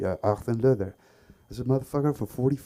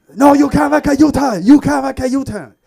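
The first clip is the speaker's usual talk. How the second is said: put-on very high, very loud, adamant, insistent shouting; 14 semitones higher, 12 dB louder than usual. Retelling another driver scolding over a legal U-turn: imitating an adamant driver. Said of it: "He was very adamant".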